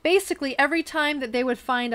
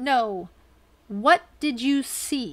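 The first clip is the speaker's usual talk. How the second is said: stern, demanding tone in a deeper voice. Recounting a gentleman questioning William Cooper, retelling a stern, deeper voice. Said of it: "a more stern voice said".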